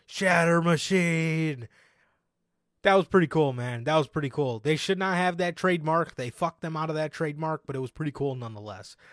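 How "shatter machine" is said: put-on excited yell like ringside commentary. Retelling a wrestling finish move: imitating Corey Graves yelling. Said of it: "as Corey Graves yells".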